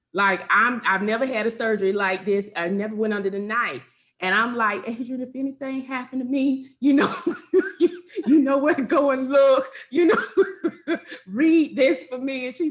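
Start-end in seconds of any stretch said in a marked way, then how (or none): 4.9-12.5 high, wailing, boo-hoo hollering through tears. Retelling a phone call before surgery: imitating her own loud crying. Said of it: "I am boo-hoo hollering".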